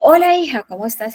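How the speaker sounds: overdone, loud, high-pitched shouting. Example of greeting a daughter with a voice too loud: shouting too loudly. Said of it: "utilizo un tono de voz demasiado elevado ... Y la grito".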